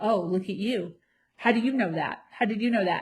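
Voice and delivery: mock sarcastic, teasing tone. Retelling a boyfriend's teasing remarks: imitating sarcastic teasing. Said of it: "little sarcastic things".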